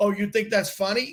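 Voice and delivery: ordinary talk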